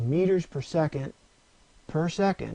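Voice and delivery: deliberate pause before the final "per second". Explaining meters per second per second, pause before the last per second. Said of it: "and I pause there on purpose".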